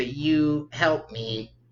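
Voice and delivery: little mechanical creature voice. Voicing a little automaton asking the player for help: little robot voice. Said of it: "and then you hear a voice say".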